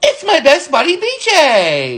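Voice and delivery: slow delivery with the J sound stretched out. Pretending to be Baby Bop to greet a coworker: Baby Bop voice. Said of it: "pretend to be Baby Bop on Barney and Friends".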